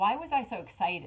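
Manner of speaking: ordinary delivery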